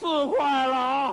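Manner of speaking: slow, stretched-out shouting.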